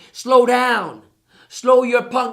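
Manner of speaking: play-acted hostile, very slow, loud, harsh voice. Retelling what he was told at work about slowing down: imitating a harsh, unkind tone. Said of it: "they were saying it like that. They weren't saying it real nice to me".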